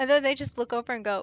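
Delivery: normal talking voice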